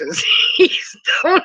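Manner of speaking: high, slow laughter breaking in mid-sentence.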